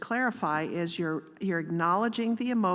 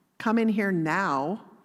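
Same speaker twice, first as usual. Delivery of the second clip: put-on motherly voice, slower; 3 dB louder than usual. Showing listeners what mom voice sounds like, in mom voice. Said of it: "we have something called mom voice".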